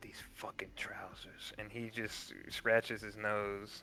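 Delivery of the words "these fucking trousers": low muttering under the breath, much quieter. Narrating a character who then scratches his nose: muttering under his breath. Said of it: "he just mutters under his breath".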